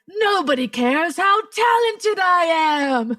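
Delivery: anguished, high, despairing wail. Retelling what a man screamed as the speaker was leaving, retelling a scream to the sky. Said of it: "he screamed to the sky".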